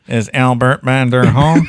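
loud, mechanical, robot-like voice. Retelling the strange phone callers' question, in a mechanical voice. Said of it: "Mechanical voices".

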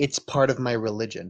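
ordinary talk

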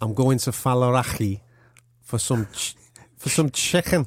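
Scouse Liverpool accent. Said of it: "Go on then".

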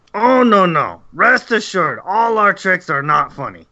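comic, high, reassuring goblin monster voice. A goblin guide answers an adventurer's warning against tricks, goblin voice. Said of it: "you can see 3 goblins in the darkness, / Stone give order to [name]. [name] very angry. He say not enough food. Need more food for Stone. Yes, more food for Stone. More food for [name]. Me am hungry".

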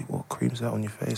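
acted whispering. Retelling what his mate whispered to him in the kitchen, retelling a whisper. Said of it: "he just whispered to me".

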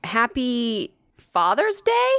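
mock baffled, bewildered, very confused voice. Speaker retells someone answering her greeting, imitating a confused voice. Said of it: "he goes like in the most confused voice ever".

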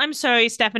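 normal talking voice

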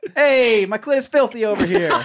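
put-on New York accent, voice pitched way up high. Asked to repeat the line in a new york accent, saying it in new york accent. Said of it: "It in a New York accent now".

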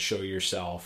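ordinary talk, nothing marked

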